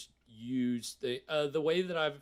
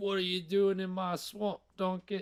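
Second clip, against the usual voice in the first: terrible ogre voice, pitched up; 6 semitones higher than usual. Speaker joking about whose swamp it could be, terrible Shrek impression. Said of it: "I do a terrible Shrek impression".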